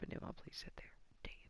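whispered, annoyed grumbling aside.

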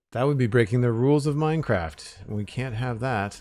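dry, tongue-in-cheek sarcastic tone. Building in Minecraft, the speaker comments on a piece that won't connect, sarcastic. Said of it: "Hashtag sarcasm".

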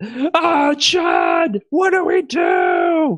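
very high, very slow, drawn-out swooping scream. Recounting the game to the group, acting out screaming. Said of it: "And I'm just screaming".

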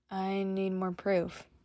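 hesitantly. Reading a story, Shuji replies to Chuuya hesitantly. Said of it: "Shuji said hesitantly".

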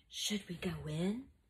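softly spoken. After hearing a groan behind a curtain, a character asks the others, softly. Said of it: "Julius asked softly".

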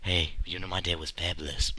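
very quiet, very low, hushed half-whisper. Acting out a man half-whispering in your ear, imitating someone half-whispering. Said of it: "he whispered in your ear".

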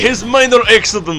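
mock Russian accent.

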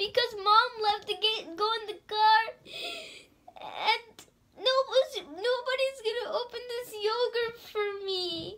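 put-on high-pitched, tearful small child sobbing. Retelling what Charlie said while crying downstairs: imitating Charlie crying. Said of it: "he's crying downstairs".

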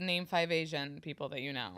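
plain

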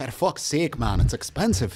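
loud, high, terrible, fake Scottish accent. Complaining that Michter's is expensive, in a bad Scottish accent. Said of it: "Worst Scottish accent ever right there".

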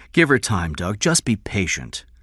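usual speaking voice

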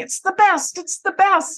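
mock very high, excitable, excited shouting. Retelling a host's reaction to a refused offer: imitating Muhammad shouting excitedly. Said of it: "he was shouting".

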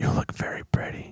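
close, breathy whisper, right at the ear. Retelling someone leaning to a girl's ear: imitating Joe Biden whispering. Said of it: "he's coming up to my ear and he's whispering".

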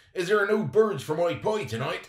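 furious, shrill, very loud yell. A furious character confronts boys stuck in a tree, shouting. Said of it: "he shouted".

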